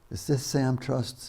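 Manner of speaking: little wispy voice, soft, slow, whispered. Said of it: "this little wispy voice".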